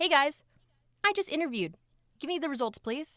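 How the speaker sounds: eager, annoying, high-pitched pestering tone. Retelling pestering the hiring team after an interview: retelling own pestering request. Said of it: "I was very annoying to the H R".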